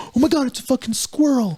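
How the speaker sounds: mock alarmed, startled, high, panicked outburst. Imitating Californians spotting a squirrel: imitating someone freaking out. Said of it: "we freak out if we see a squirrel".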